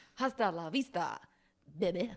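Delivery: deep, unhurried delivery. Reading a film quote on a game card: Christopher Walken impression. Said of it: "In a Christopher Walken impression".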